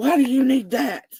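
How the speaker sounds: furious, very high-pitched, loud, angry yell. Retelling how a man answered a request for his number, retelling an angry scream. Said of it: "screams out in this angry tone".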